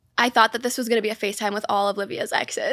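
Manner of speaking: ordinary delivery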